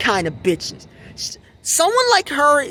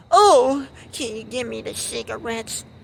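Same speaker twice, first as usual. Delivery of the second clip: exaggerated, mock-pleading put-on sob voice. Acting out a woman asking the man she treats as her servant, exaggerated sob-story voice. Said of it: "exaggerated sob story voice".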